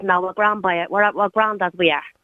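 ordinary talk

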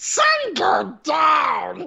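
very high swooping call, drawn out going down. Retelling what Animal says after knocking over a lamp: Animal voice. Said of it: "Fuck you, Animal".

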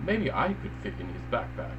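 normal talking voice

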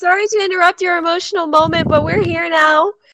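very loud, high hollering yell. Voicing a character calling out across a distance: yelling out to others. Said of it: "puts her hands over her mouth and yells out".

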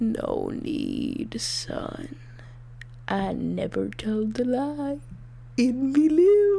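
wicked, nasty villain voice with swooping pitch. Answering someone who says this is important, in an awful evil voice. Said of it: "your awful, evil voice".

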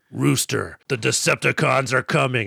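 rough, commanding robot leader voice. Describing an imagined movie scene with a voice heard: transforming robot leader voice. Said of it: "we hear in the voice of, I don't know, maybe a transforming robot leader, like".

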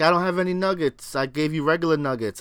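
ordinary talk

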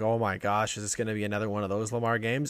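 ordinary talk, nothing marked

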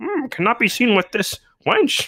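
high alien creature character voice. Joking about a scene that was off screen, in a Yoda voice. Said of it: "I was trying to think of what Yoda would say".

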